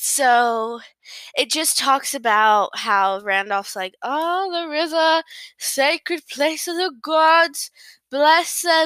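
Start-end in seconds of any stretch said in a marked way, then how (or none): 4.0-8.9 derisive, taunting send-up with raised pitch. Summarizing a story's scene, mocking Randolph's voice. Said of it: "I'm mocking him".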